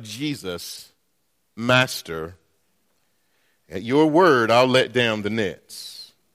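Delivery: play-acted, low, openly sarcastic going-along. Speaker retells a fisherman's reply to Jesus, acting out a sarcastic reply. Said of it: "I want you to hear the sarcasm in what he says".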